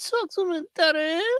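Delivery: very high, squeaky put-on voice.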